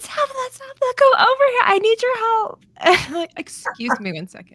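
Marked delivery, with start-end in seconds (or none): 0.0-2.6 put-on shrill, very high, loud, over-the-top girl voice. Retelling how girls suddenly called the speaker over for help: imitating really loud extra girls. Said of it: "like really loud extra girls".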